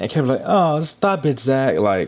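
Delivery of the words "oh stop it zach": high, slow, drawn-out put-on English accent. Imitating a couple's banter on the show in an English accent. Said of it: "with his little English accent, they be talking like this".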